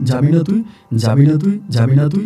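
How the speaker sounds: normal talking voice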